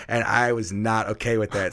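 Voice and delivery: ordinary talk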